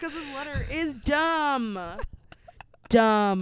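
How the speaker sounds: shrill, loud, fed-up screaming. Reacting to a letter they call stupid, screaming. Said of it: "I'm screaming because it's so stupid".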